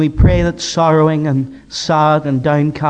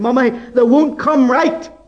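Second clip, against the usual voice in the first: put-on high, annoyed, fed-up little girl shouting; 9 semitones higher than usual. Retelling a frustrated wee girl calling to her mummy: imitating a girl shouting. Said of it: "she shouted out".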